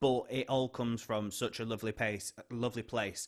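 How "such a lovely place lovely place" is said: ordinary talk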